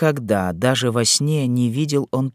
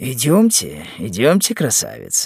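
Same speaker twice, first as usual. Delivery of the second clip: ordinary delivery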